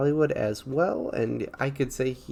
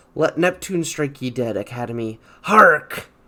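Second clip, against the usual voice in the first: put-on raised, swashbuckling, salty old pirate captain voice; 8 dB louder than usual. Reacting to an Academy snub: Willem Dafoe pirate voice. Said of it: "who really does sound like a pirate".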